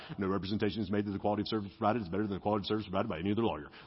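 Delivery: very low, rapid, rattled-off delivery. Showing a sentence too long for one breath, the speaker does a rapid radio disclaimer read. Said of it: "read like the radio disclaimers".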